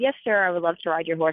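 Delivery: normal talking voice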